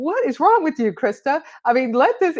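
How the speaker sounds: put-on high screaming. Retelling scolding herself about a high school boyfriend: imitating screaming at herself. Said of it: "screaming at myself".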